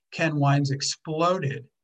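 ordinary delivery

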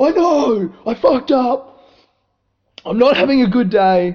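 miserable, self-pitying, high, loud whiny lament.

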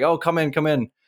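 mimicked full-mouth speech. Retelling how a woman apologized at the door, imitating talking with mouth full. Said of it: "had a mouthful of food".

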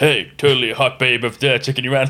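put-on blokey man's voice. Recapping a scene, the speaker quotes Phoebe telling Chandler, in Phoebe's bloke voice. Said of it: "just like a bloke voice".

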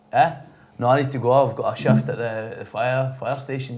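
normal talking voice

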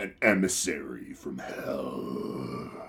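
breathy, whispered, menacing evil voice. Reading a Spider-Man series title aloud on the show, in an evil voice. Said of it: "you read this with your evil voice".

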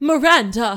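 yelling as loud as possible, full-throated. Example of yelling an ex's name as loud as possible: name yelled loudly. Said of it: "they just yell their ex's name as loud as they can".

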